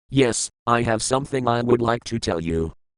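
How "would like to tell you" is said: plain reading voice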